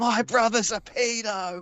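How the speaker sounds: put-on very high, drawn-out drunken screaming. Imagining him rolling into a quiet bar, imitating Roy screaming. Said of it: "Roy comes rolling in screaming".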